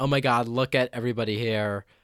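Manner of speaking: put-on feminine, effeminate-sounding voice.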